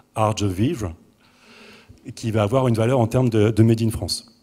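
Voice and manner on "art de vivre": put-on English accent on French, anglicized. Talking about Made in France to an audience, saying a phrase in English-accented French. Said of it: "alors je peux vous le faire à l'anglaise".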